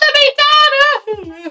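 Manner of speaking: mock child screaming voice. Retelling being grabbed as a crying five-year-old, imitating a child screaming. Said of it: "I was screaming".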